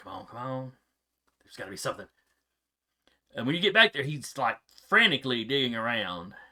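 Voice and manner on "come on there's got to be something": mumbled, muttered, much quieter. Voicing a character searching around, mumbling under his breath. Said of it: "mumbling under his breath".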